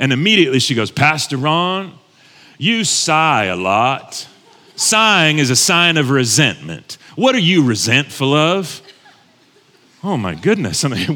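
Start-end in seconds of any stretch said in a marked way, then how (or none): 0.9-8.8 put-on thick Southern Mississippi accent, slow and deep drawl. Retelling what a counselor said to him: imitating a Mississippi Southern accent. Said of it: "had this deep Mississippi Southern accent".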